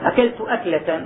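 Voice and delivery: plain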